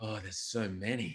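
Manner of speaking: soft, slow, dreamy, drifting musing tone. Retelling how an interviewee answered a question: imitating Deng Adel, dreamy. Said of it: "He got a little dreamy and he was like".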